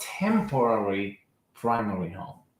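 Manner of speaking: "temporary primary home" said with strong emphasis. Explaining a step in buying a home: stress on TEMPORARY PRIMARY HOME. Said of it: "I emphasize the word temporary primary home".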